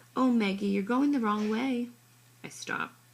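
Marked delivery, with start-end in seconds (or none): 0.2-1.9 syrupy, put-on, fake-sweet, pitched-up voice. Narrating a story, voicing a bossy girl speaking to Maggie in a fake sweet voice. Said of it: "she says in her fake sweet voice".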